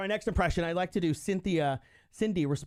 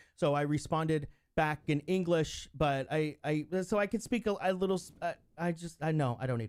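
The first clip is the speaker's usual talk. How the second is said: ordinary talk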